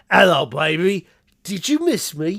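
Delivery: put-on Australian accent. Praising an actor's Mortal Kombat performance, quoting Kano in an Australian accent. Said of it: "the actor does an Australian accent".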